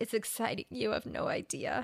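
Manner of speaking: soft, quavering, emotional voice. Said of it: "And his voice quavered a bit like that".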